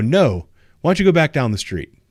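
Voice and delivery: fake, overly sweet politeness. Answering a neighbor who asks what's going on, retelling a really nice tone. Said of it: "I say it like in a really nice way".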